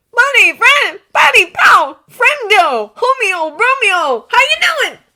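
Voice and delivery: forced cheer, strained, shrill, very high and loud. Narrator reads Lance greeting Keith at the door: strained enthusiasm, pitched too high. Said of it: "he says with strained enthusiasm, voice pitched a little too high".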